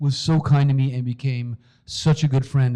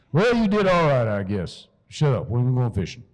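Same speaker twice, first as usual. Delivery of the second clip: slow, put-on Southern drawl. Imitating Dad, who grew up in North Carolina, in Dad's Southern drawl. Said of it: "he talks like this".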